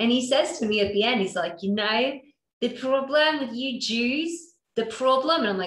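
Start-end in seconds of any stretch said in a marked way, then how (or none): 1.6-5.4 put-on Australian accent, higher pitch. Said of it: "That's my accent".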